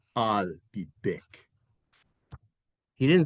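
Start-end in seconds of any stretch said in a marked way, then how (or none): 0.1-1.4 put-on low, soft voice with an Austrian accent. Quizzing listeners on a famous Terminator line, Arnold Schwarzenegger impression. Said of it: "With his Austrian accent".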